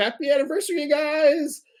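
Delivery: high, mock yelling woman's voice.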